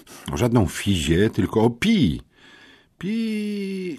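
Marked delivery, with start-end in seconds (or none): 2.9-3.9 very high-pitched, drawn-out, pained squeak. A bodybuilder hears a question and squeaks, wincing painfully. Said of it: "zapiszczał kulturysta sztangista, krzywiąc się boleśnie".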